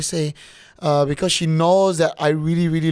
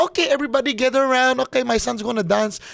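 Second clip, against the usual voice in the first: imitated Filipino accent; 8 semitones higher than usual. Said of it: "all Filipino moms sounds like that".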